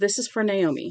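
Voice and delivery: ordinary talk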